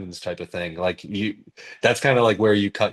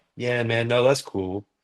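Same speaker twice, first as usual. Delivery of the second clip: put-on chill, low-energy nervous voice; 2 semitones higher than usual. Showing how they act before going on stage: imitating own chill low-energy nervousness. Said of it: "that's me being nervous".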